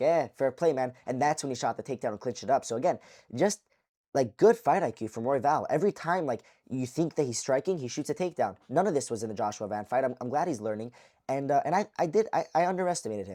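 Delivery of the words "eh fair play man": ordinary delivery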